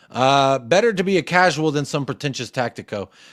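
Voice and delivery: ordinary talk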